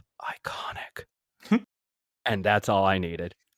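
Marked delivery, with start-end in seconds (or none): 0.2-1.0 very quiet, breathy whisper under the breath. Recounting a man at security who whispers to himself: retelling a whisper. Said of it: "he just whispers to himself".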